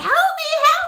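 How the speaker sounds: mock piercing, shrill scream, pitched way up. Showing how the skits sound: imitating own screaming. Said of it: "and I'm screaming, you know, like".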